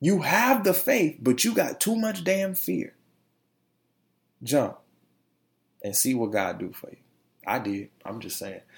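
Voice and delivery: heartfelt, moved, stirred-up emotional delivery. A show host, just before getting into the show, getting emotional. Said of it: "I'm getting emotional over here".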